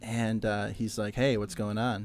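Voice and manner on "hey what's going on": put-on seductive voice. Retelling a phone call from an event coordinator: imitating a seductive Matt. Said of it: "did he say it that seductively?".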